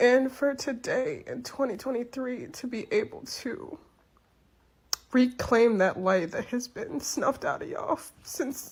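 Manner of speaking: tearful speech, words coming through crying. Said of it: "I'm trying to get my shit together".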